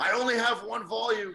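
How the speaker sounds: very high, drawn-out shouted yell. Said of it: "why are you yelling then?".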